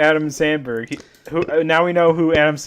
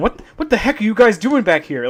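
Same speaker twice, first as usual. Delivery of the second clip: put-on high, pitched-up old-lady voice; 5 semitones higher than usual. Describing a surreal, corny wrestling story, Kenny Omega old-lady voice. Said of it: "He talks like a old lady".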